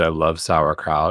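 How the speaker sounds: usual speaking voice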